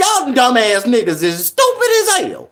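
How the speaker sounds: play-acted heated, angry outburst with swooping pitch. Retelling a remark made while hearing moon talk at Walmart: retelling an angry outburst. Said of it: "I was so goddamn mad".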